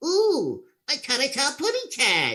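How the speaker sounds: put-on high, swooping, cooing baby talk. Showing how a voice becomes Tweety by talking like a baby. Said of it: "talk like a baby, it becomes Tweety".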